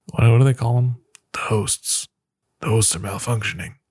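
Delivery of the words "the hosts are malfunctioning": weak, bad, rough put-on celebrity voice. Showing an impression of an actor's Westworld role: Jeffrey Wright impression. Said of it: "Not a great impression".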